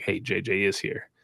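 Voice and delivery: secretive whisper, slow and soft. Retelling quietly telling a son someone has arrived: retelling a whisper. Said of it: "whisper to him".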